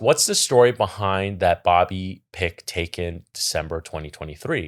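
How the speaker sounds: plain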